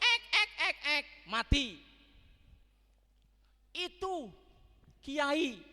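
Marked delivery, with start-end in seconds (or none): 0.0-1.1 high parrot squawk on ek. Speaker warning listeners about dying like a parrot, imitating a parrot. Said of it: "mengucapkan seperti burung beo".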